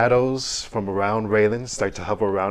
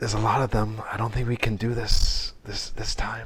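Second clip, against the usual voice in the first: whispered put-on character voice. Narrating a scene and voicing a whispered aside, Raylen whispering. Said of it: "maybe I can whisper right here".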